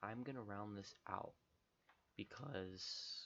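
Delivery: slow voice, breaking and cracking. Wrapping up a long video for viewers, voice cracking. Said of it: "sorry for my voice crack".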